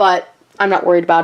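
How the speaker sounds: ordinary delivery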